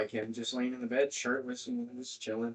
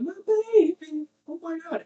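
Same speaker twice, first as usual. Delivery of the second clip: put-on scream, higher and louder; 8 dB louder than usual. Retelling how the grandma reacted on walking in: imitating grandma screaming. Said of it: "she's screaming".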